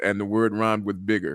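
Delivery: normal talking voice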